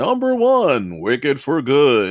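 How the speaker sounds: deep, dramatic, swooping movie-trailer announcer voice. Announcing a number one movie, speaker does a Moviefone announcer voice. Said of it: "I have this movie phone voice on".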